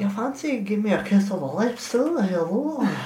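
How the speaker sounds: put-on soft Scottish accent. Voicing Mimir while retelling Norse myth: soft Scottish accent as Mimir. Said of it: "spoke with a really soft, uh, Scottish accent".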